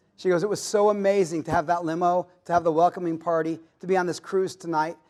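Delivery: ordinary delivery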